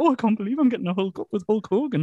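high, meek, simpering little voice. Retelling how Sid reacted when Hogan stripped him, simpering Sid impression. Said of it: "simpers like a little bitch".

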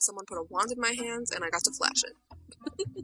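normal talking voice

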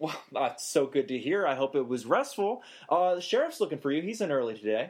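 sunny, upbeat, bright, swooping sing-song voice. A character speaking to another in an acted scene, bright and cheery voice. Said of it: "it's very bright, like, and cheery".

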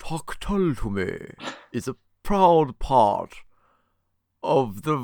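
high, spooky, put-on vampire voice. Podcast host reads the network tagline after being asked, in a vampire voice. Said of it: "can I do it like a vampire?".

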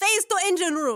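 shouting in a put-on character voice. Voicing a character at a teleporter: character shouting. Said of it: "she shouts".

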